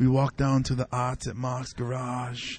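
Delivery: put-on seductive voice. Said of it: "setting up a, a porno scene".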